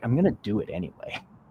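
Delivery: laid-back, relaxed, easygoing delivery. Showing how to say something to yourself, in a relaxed, easy tone. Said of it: "You can say it with a relaxed way".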